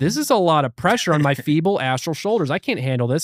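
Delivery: ordinary delivery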